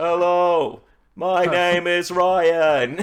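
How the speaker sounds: very slow, high-pitched speech-machine computer voice. Joking about talking through a speech device: Microsoft Sam voice. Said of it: "just be like".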